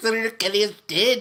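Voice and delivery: put-on loud, high-pitched, strange Jamaican accent. Quoting a movie character's line: Halle Berry's weird Jamaican accent. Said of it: "Halle Berry was doing some weird Jamaican accent".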